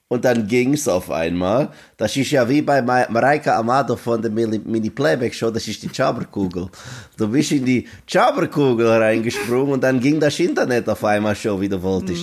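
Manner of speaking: German spoken with a mock Dutch accent.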